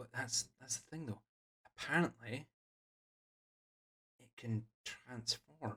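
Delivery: barely audible, very soft, hushed half-whisper. A character in a story talking about the guards and a threat, hushed half-whispers. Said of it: "in hushed whispers".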